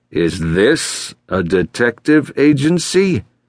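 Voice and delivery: very slow, disdainful tone. A man questions Sarah at the reception desk; disdainful. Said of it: "He let the question fly with disdain".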